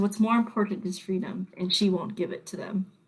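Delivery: hushed, whispered voice. Voicing a dying creature's last words in the air: whispering voice. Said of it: "You hear a whisper that says".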